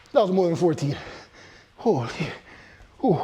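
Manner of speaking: talking out of breath with heavy breathing. Finishing a tough set of an exercise: heavy breathing while talking. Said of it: "Excuse my heavy breathing".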